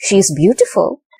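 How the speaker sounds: pitch dips then climbs on beautiful. Intonation lesson example: fall-rise on she's beautiful. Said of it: "There is a for and then there, there is a rise".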